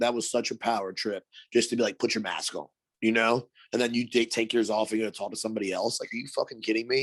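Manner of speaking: ordinary talk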